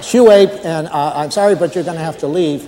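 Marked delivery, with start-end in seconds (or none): none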